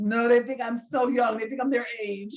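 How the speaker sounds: showing-off tone. Retelling what a friend says after grad school: imitating Darren. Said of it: "He's like".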